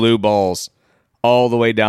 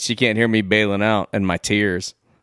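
ordinary delivery

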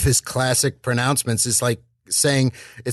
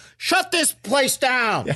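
very high-pitched, drawn-out, stretched delivery; 13 semitones higher than usual. Joking about a bar getting shut down, doing John Taffer. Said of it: "my John Taffer impression".

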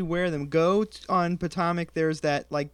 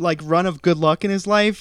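loud, heavily sarcastic praising tone. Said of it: "I'm being sarcastic".

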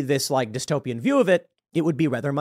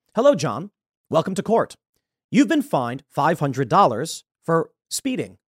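automated machine voice. Acting out a court machine reading out a fine: court machine voice. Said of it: "Now it would be like".

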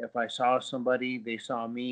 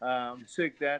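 ordinary delivery

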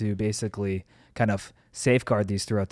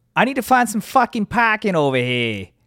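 awful put-on Boston accent, very high pitch; 11 semitones higher, 7 dB louder than usual. Trying a line about finding parking, in a put-on Boston accent. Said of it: "I could do it in a fucking Boston accent".

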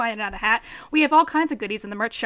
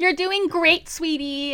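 doting, reassuring, warm mother voice; 3 semitones higher than usual. Praising a co-host's clumsy sign-off: Kris Jenner voice. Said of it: "in my best Kris Jenner voice".

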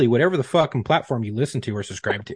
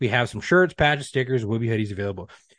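usual speaking voice

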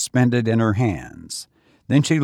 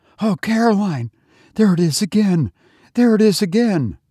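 wild, high, wailing outburst; 8 semitones higher, 3 dB louder than usual. A woman glancing at a shadow on the wall cries out to her companion in a wild wail. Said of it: "Rebecca burst out in a wild wail".

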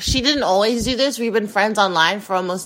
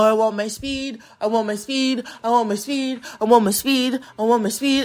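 put-on craving manner. Retelling walking around the apartment: imitating own addict-like craving. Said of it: "And I sound like an addict".

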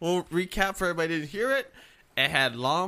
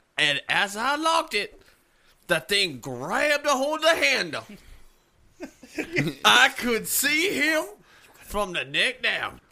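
sermon-style southern preacher voice; 3 semitones higher, 4 dB louder than usual. Telling how they ran into a car to escape a thing, sounding like a southern preacher. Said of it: "starting to sound like a southern preacher".

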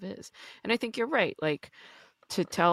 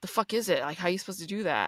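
put-on anger, much faster. Speaker recalling how they used to question self-love, mock-angry. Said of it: "wonder that in a very angry sort of way".

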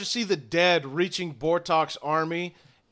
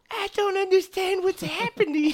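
put-on frightened cat voice, higher; 14 semitones higher than usual. Voicing Kokolo, who gapes in confusion at the fighting: scared Kokolo voice. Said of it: "She just".

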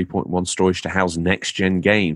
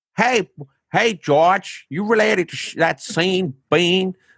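put-on New York accent, pitched way up; 12 semitones higher than usual. Imitating a local asking if he is related to sean bean: attempted new york accent. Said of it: "trying to do a New York".

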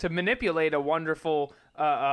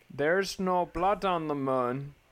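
put-on South African accent. Repeating a line in an Elon Musk accent. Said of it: "How is your Elon Musk accent?".

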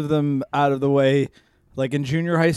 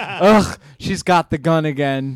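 usual speaking voice

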